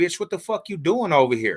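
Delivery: mock heated, high, angry confrontational tone. Retelling confronting a woman at a club: imitating getting mad at her. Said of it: "I get to tripping on her".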